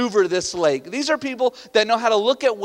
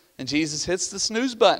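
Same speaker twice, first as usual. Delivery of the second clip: normal talking voice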